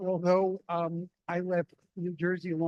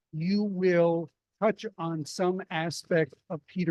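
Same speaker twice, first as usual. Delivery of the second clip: ordinary talk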